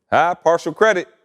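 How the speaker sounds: normal talking voice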